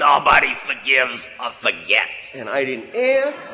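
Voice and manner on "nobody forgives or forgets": impossibly deep, gravelly, slow voice. Retelling what a man said while looking out over the river, impossibly deep, gravelly voice. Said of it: "in one of these impossibly deep and gravelly voice".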